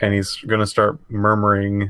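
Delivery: ordinary talk, nothing marked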